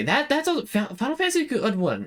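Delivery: stammering over repeated words. Streamer listing favorite games to viewers, stuttering. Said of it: "I am stuttering so bad tonight".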